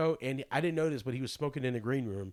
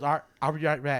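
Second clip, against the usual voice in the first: put-on Southern accent, louder; 4 dB louder than usual. Retelling what a friend asked at a show: imitating a Southern accent. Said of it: "He's, like, real Southern".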